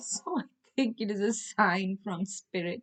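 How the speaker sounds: speaking through laughter. Reacting to a smart speaker talking unexpectedly, laughing while talking. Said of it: "I just can't help laughing".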